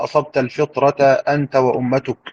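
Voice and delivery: plain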